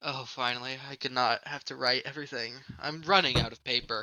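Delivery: soft, dejected, downcast, depressed man's voice. Narrator voicing a character speaking to the players: depressed-sounding man's voice. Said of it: "a very depressed sounding man".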